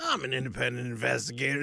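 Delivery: gravel-filled, rough, rasping voice. Describing a guy who called himself an independent investigator: gravelly voice impression. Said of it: "like this real gravelly voice".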